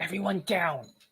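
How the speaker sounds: harsh whisper. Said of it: "he whispers harshly".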